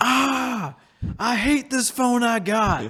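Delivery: very high, very slow, drawn-out griping holler. Retelling a video of a man at his phone: imitating a man yelling. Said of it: "the guy yelling at his phone".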